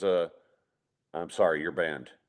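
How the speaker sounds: mock very low, utterly serious deadpan. Retelling how someone banned a guest at the bar: imitating P J, dead serious. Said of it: "just as serious as you can be".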